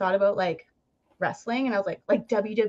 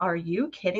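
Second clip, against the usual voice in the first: mock-unimpressed and incredulous, lower and quieter; 3 semitones lower, 4 dB quieter than usual. Speaker retells her mom's reaction, imitating unimpressed mom. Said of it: "you could just see that she was not impressed".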